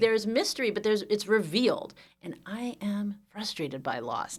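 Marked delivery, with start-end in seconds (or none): 2.2-4.4 slow, hushed half-whisper, as if nobody can hear. Podcast guest talks as if not on a podcast, half-whispering. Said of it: "I'm whispering as if I'm not speaking on a podcast".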